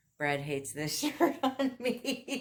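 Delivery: slow, high-pitched laughing. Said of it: "I'm just laughing 'cause".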